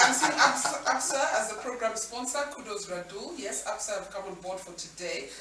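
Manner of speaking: ordinary talk, nothing marked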